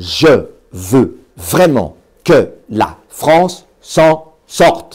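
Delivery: very slow, each word beaten out separately. Advice on how professional speakers beat out a phrase: each word hammered out separately. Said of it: "ils vont parfois scander une phrase en scandant chaque mot".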